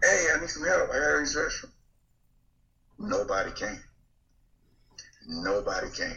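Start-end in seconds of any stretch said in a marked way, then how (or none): 0.0-1.7 put-on loud, high-pitched hollering. Speaker recounts calling out when nobody came, retelling a loud call for help. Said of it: "I'm saying it loud".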